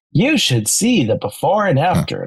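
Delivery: sing-song, annoying AI narrator woman voice. Mocking the voice heard on cleaning hack videos: annoying AI woman voice. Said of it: "the annoying voice that's like".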